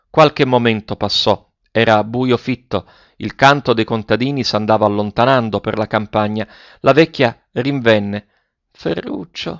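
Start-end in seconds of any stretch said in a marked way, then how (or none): 8.7-9.6 very quiet, barely audible high cry, teeth chattering. A narrator reads an old woman calling out to the boy, barely audible, teeth chattering. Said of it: "chiamò con voce appena intelligibile, battendo i denti".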